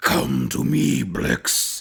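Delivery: deep, rough, low voice, every word dragged out. Comparing a movie voiceover to a cartoon villain, Doctor Claw voice. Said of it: "I don't have a great Doctor Claw".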